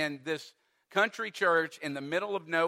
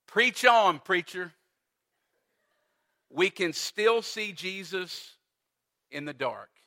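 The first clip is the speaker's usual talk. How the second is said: usual speaking voice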